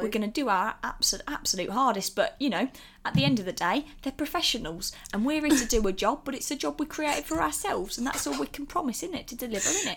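put-on southern English accent. A co-host keeps talking while slipping into a put-on southern English accent. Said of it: "there's [name]'s second accent of the day".

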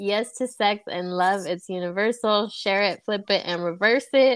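ordinary delivery

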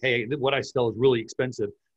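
plain

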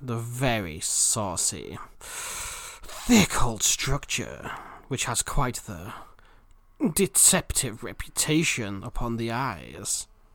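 very slow, put-on, sultry seductive voice. Reading a description aloud for listeners in a seductive reading voice. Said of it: "too turned on to understand me?".

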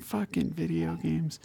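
muttering under the breath. Retelling a man's reaction to fetching video games, imitating him muttering under his breath. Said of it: "I just heard him under his breath".

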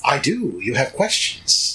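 put-on dry, crackling old crone voice. Playing the crone, answering the companions, voice crackling like dry weeds. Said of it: "her voice crackles like dry weeds".

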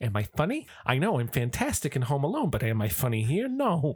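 jabbing, wisecracking, animated, pitch swinging all over. Acting out a movie character confronting the shark: Joe Pesci impression. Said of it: "You've heard what Joe Pesci sounds like".

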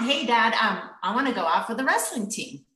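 ordinary delivery

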